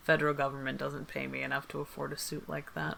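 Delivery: flat, quick, bone-dry deadpan aside. Speaking in character to Jules about a man's suit: dry delivery. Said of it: "And just very dryly say".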